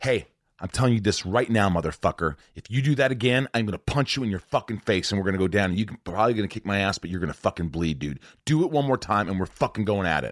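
said without shouting. Retelling what he finally told a man who kept mocking his bald head, not screaming. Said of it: "I wasn't screaming".

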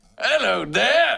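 high, slow mock British accent.

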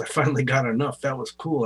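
ordinary talk

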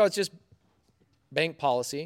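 casual, offhand, nonchalant, been-there-before tone. Retelling what the branch owner said on the phone: imitating a nonchalant tone. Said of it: "he sounded, like, nonchalant".

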